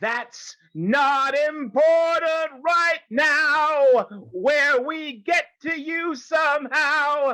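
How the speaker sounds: high, slow, strained, dying-sounding shout. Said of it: "You sound like you're dying".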